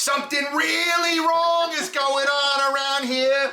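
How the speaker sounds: very high, loud, slow, drawn-out dramatic scream. Retelling shouting a movie line at an actor: retelling a scream. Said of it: "I screamed out the line from that movie".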